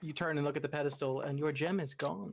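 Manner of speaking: ordinary talk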